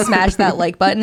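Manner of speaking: ordinary delivery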